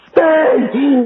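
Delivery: mock shrill yell, very high-pitched and loud. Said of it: "would I yell like that?".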